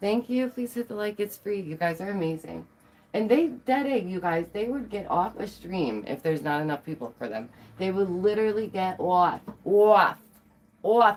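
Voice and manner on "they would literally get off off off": New York accent on the repeated words. Talking to viewers about streamers leaving, in a new york accent. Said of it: "There's that New York accent for you".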